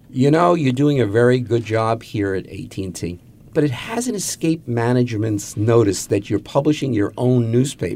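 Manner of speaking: ordinary talk, nothing marked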